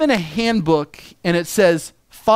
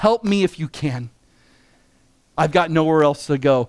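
desperate, pleading tone, lower; 4 semitones lower than usual. Retelling the father's plea to Jesus: imitating desperate pleading. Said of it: "you hear the desperation in his voice".

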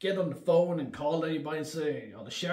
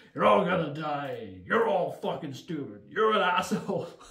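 put-on dry, sinister bartender voice; 4 dB louder than usual. Describing a bartender character they love, the speaker quotes him, in a dry sinister tone. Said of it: "He's just so dry and just so sinister".

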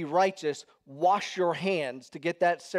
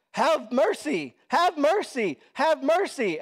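acted-out, very high, stretched-out, drawn-out wailing scream; 9 semitones higher, 4 dB louder than usual. Imagining someone in here during the sermon: imitating someone screaming. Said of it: "screaming at me".

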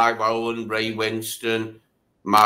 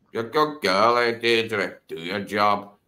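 bad, unconvincing attempt at an Irish accent. Quoting a line from the film being discussed, in a bad Jonathan Pryce Irish accent. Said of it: "That was meant to be an Irish".

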